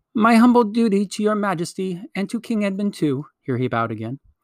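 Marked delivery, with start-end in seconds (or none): 0.1-3.2 shrill, high, piping mouse voice. Reading a story, a mouse greets her majesty: shrill, piping Reepicheep voice. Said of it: "said in his shrill, piping voice".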